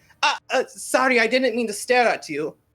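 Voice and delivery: very high, loud, flustered, freaking-out voice. Voicing a woman caught staring at a motorcycle rider: flustered apology. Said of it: "starts freaking out and going".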